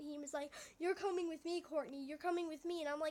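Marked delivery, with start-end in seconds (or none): 0.8-2.8 play-acted angry, flipped-out, insistent voice. Retelling an angry demand to come along: imitating someone flipping out. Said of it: "he flipped out".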